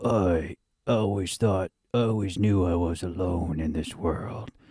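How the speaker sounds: rasping tough-guy action-hero voice. Mocking an action movie hero's line: imitating a raspy action-hero voice. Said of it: "talk in a raspy voice".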